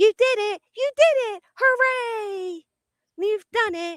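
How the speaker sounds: very high, cheery kids' cartoon voice. Mocking a cheer for Brittany as a child's cartoon would, in a mock kids' cartoon voice. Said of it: "all it reminded me of is like a, a child's cartoon".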